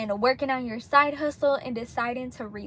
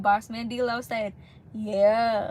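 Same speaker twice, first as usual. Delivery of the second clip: normal talking voice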